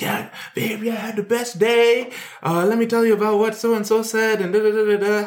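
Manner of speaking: play-acted, very high, gushing, bubbly excitement. Retelling how the partner called after work: imitating high-energy partner. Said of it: "high energy".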